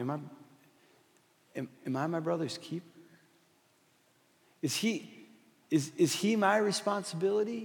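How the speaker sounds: almost mocking, stumbling delivery. Retelling Cain's answer when God asks about his brother: imitating Cain mocking. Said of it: "almost in a mocking way".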